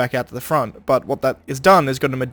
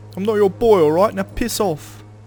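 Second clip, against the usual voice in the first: amateur put-on Cockney accent, pitched up; 7 semitones higher than usual. Repeating a game character's line after hearing it: imitating a Cockney accent. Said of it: "I need to get better at a Cockney accent".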